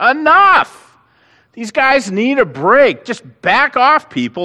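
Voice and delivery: high, loud, slow exasperated shout.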